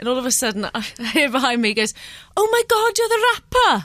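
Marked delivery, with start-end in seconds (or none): 2.4-3.8 very high, shrill, bad put-on Welsh accent. Retelling what a man behind you on an empty train said: awful welsh accent. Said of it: "Apologies for my awful Welsh accent then".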